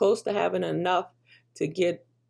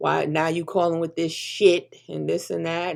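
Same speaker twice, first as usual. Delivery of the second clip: ordinary delivery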